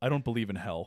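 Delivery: play-acted, very stiff, rigid, unbending delivery. Retelling Mr. Kubrick's answer on the phone, in a put-on very stiff voice. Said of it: "he said in a very stiff voice".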